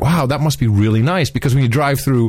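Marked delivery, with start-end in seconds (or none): none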